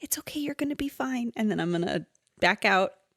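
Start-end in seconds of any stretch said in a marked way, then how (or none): 0.0-1.3 soft, hushed half-whisper with almost no voice. Player character half-whispering to a little sapling, half-whispering. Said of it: "I'm going to just whisper to this little sapling".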